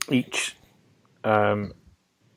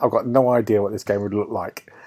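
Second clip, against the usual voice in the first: normal talking voice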